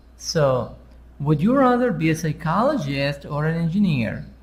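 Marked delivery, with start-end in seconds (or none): 1.2-4.2 pitch rises up to "or", falls on "engineer". English lesson on choice questions, pitch up before or, down at end. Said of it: "before or, sound is up. After or, sound is down".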